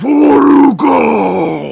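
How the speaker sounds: in-character, put-on shouting voice. Voicing a familiar voice ringing out from the north: character shouting. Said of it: "you hear the voice again say".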